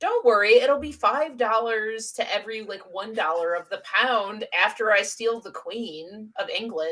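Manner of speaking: ordinary talk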